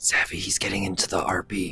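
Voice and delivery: soft, low, whispered aside.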